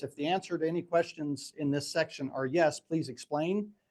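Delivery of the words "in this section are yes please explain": ordinary talk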